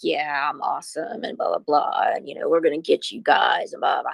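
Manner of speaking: put-on fast, energetic talk. Acting out a man at the start of a recording: retelling fast, hyper-energetic talk. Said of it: "real fast and, like, really energetic".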